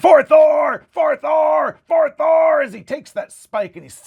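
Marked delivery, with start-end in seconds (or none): 0.0-2.6 very slow, loud, drawn-out scream. A narrator voices Korgoth, still screaming at the forge: screaming battle cry. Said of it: "And he's still screaming".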